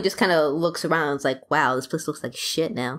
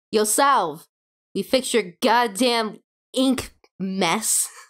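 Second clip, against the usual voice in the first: high, drawn-out call, projected loudly; 5 semitones higher than usual. A character named Phoenix walks to the bottom of a staircase, Phoenix shouting up the stairs. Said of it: "just shouts up".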